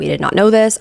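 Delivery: plain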